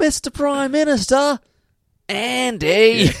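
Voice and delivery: put-on over-the-top Australian accent, very high, very slow. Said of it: "Australian accent that they do in that particular moment".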